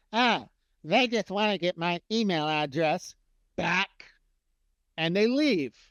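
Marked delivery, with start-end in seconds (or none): 0.1-3.9 mock whiny, complaining voice. Imitating people who see an opt-in form, in a mock-whiny voice. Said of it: "in their best whiny voice".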